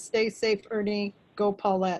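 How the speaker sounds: plain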